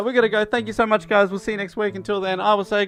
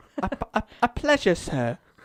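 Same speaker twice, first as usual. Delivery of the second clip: put-on London actor voice; 3 dB quieter than usual. Doing an impression on request, greeting another impression: Michael Caine impression. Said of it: "[name] as Michael Caine".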